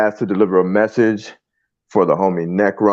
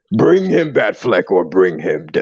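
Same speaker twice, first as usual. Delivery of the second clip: animated character voice with big swooping pitch swings. Speaker repeats Necron's message to friends, in a Necron voice. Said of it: "let me do a like nice little Necron voice for you".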